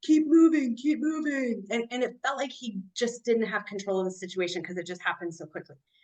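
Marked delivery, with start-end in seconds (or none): 0.0-1.6 acted-out slow, repeated yelling. Retelling how a ranger shouted at stopped drivers: imitating someone yelling. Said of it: "But he's yelling".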